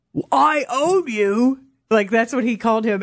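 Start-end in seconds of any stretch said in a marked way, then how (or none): 0.3-1.6 put-on shout, British accent, higher. Retelling what a stadium guide shouted about the player: imitating a shout in a british accent. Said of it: "he even shouted out".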